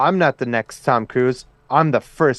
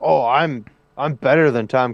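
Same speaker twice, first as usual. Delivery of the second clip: mock snide, shady tone, slower. Complaining about a woman's attitude, imitating someone throwing shade. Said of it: "she throws all that shade".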